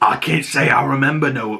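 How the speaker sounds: put-on old sea-dog pirate voice and accent. Recounting a scene as characters walk up to a building: pirate accent. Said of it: "he's got this great pirate accent".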